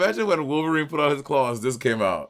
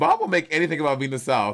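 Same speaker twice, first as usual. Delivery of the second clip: ordinary delivery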